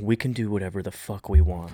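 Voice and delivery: half-whispered, very quiet, barely audible. Retelling what a character says to him: imitating a half-whisper. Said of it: "she literally is whispering to him".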